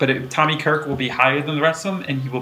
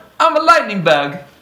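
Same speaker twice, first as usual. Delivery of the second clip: bad put-on British accent, loud and high; 8 semitones higher, 7 dB louder than usual. Voicing a lightning bug from England, in a bad British accent. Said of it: "A bad British accent".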